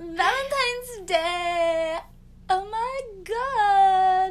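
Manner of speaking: put-on gushing valley girl voice, very high, loud. Podcast host repeats a phrase, in a valley girl voice. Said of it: "I just said it like a valley girl".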